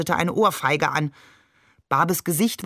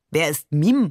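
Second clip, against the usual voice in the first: plain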